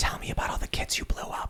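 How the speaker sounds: soft, breathy, seductive whisper.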